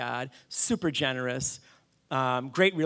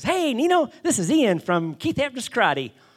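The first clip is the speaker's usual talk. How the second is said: very high, loud, chirpy, sing-song cheery tone; 10 semitones higher, 6 dB louder than usual. Retelling a phone call from a caller: imitating Ian's cheery voice. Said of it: "really cheery guy".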